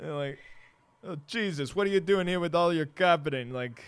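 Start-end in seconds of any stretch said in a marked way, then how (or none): 1.0-3.5 bad put-on Brooklyn accent, pitched up. Imitate Harvey Keitel's Judas talking to Jesus, in a bad Harvey Keitel Brooklyn accent. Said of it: "I can't do a Brooklyn accent".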